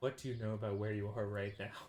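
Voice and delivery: hushed whisper. A character asking another character a question, whispering. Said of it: "He he whispers to you".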